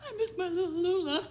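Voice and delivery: very high, loud sobbing cry. A character missing her dead cat, thinking of getting another, crying.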